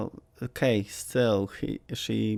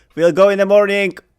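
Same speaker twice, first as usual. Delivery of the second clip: shrill, very loud, high-pitched yell; 11 semitones higher, 15 dB louder than usual. Voicing a character shouting through a closed door: shouting in character. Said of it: "I'm gonna just shout".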